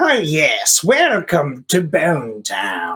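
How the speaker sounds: swooping, very slow put-on wizard voice. Imagining the wizard boss greeting visitors, in a put-on wizard boss voice. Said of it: "I can't do the same voice for that guy".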